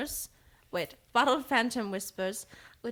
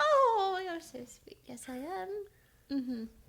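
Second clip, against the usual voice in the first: put-on very high-pitched elderly woman voice; 10 semitones higher than usual. Playing a shopkeeper being told she seems like a nice old lady: old lady character voice. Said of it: "you seem like a nice old lady".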